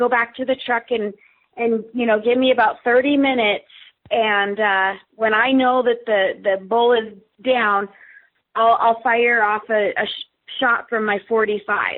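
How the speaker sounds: usual speaking voice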